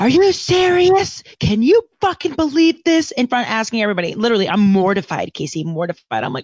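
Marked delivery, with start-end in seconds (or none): 0.0-3.1 very high-pitched, shrill screaming outburst. Retelling how the woman in the ticket booth screamed into the microphone: imitating a woman screaming. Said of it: "she screams through the microphone in the booth".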